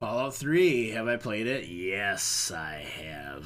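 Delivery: put-on booming announcer voice. Answering whether they have played Fallout three, sounding like Vince McMahon. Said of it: "why'd you sound like Vince McMahon there?".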